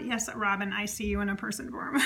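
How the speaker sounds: ordinary talk, nothing marked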